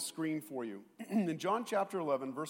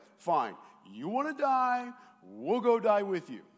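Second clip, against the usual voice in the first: put-on, full-on sarcastic tone, swooping and pitched up; 5 semitones higher, 4 dB louder than usual. Retelling Thomas's reply to Jesus, mock-sarcastic as Thomas. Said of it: "Sarcastic, like".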